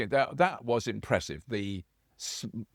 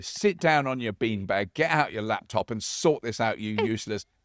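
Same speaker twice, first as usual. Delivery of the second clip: ordinary talk, nothing marked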